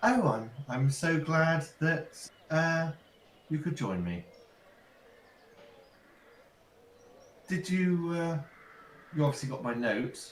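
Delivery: woman's voice. A cloaked figure greets the arrivals from behind the mat; female voice. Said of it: "a female voice sort of comes from behind the mat and says".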